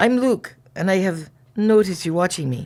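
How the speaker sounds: put-on accent from Ireland. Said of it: "get a better one".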